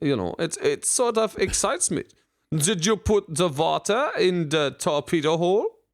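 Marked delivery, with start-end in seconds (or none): 2.5-5.7 put-on German accent in English. Showing how pretend Germans in movies talk: pretend German accent. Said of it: "I'd like to hear them talk like this".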